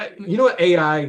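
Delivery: plain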